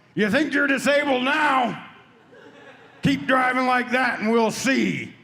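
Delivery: mock high, angry, taunting jeer. Retelling what he yelled at a driver beside him at a stoplight, retelling a yell. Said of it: "So I just yelled".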